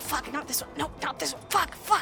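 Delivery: soft, frantic muttering. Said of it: "you can hear him muttering".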